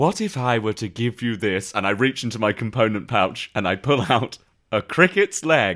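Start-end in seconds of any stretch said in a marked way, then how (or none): 0.0-1.7 put-on old-fashioned, stagey, Shakespearean theatrical delivery. Playing a character offering a circus vendor an ingredient: shakespearean manner. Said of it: "Why have you become all Shakespearean".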